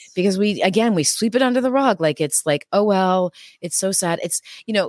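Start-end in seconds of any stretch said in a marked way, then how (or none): none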